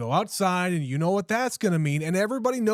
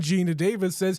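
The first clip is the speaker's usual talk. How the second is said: plain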